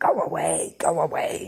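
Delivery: very slow, drawn-out hiss, creature-like. Reading a witness's account of a creature that spoke to him: hissing Gollum voice. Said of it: "in a hissing voice".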